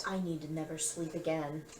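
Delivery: soft, quiet mumble under the breath. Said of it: "mumble that in Celestial".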